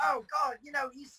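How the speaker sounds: high mock UK accent. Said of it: "That's a good accent".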